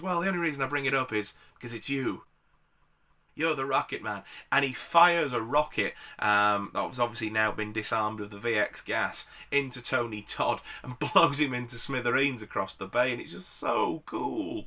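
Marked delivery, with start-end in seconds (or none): 0.0-4.2 rattled off quickly, totally dry. Retelling a movie scene where Nicolas Cage answers Tony Todd: retelling mock-deadpan. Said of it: "deadpan as anything".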